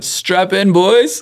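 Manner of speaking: shrill, very high rallying shout. Retelling how a rival in the next lane shouted at the field: imitating someone shouting. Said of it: "he just shouted".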